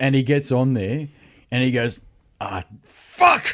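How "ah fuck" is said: mock frustrated swearing, lower pitch. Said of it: "Like this".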